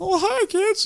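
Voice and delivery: soft, squeaky, very high cartoon mouse voice. Asked by another speaker to impersonate a man's voice, Mickey Mouse-esque impression. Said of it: "Very Mickey Mouse-esque".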